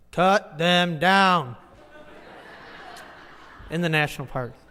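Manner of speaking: put-on loud, commanding, authoritative tone. Quoting his order to cut down trees in a park, mock-authoritative voice. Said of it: "in his authoritative voice, he's just like".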